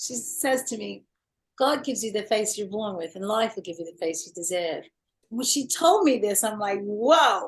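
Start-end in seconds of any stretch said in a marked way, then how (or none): 1.6-4.9 quick, put-on Australian accent. Quoting a saying a makeup artist from Australia told them: Australian accent. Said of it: "so I have to do the accent".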